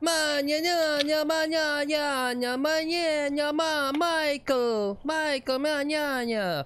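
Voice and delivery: very high, very slow mumbled nonsense. Doing his impression of the Godfather movie for the guys: Godfather movie impression. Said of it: "this is my impression of Godfather the movie".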